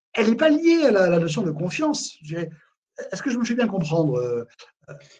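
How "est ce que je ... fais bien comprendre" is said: normal talking voice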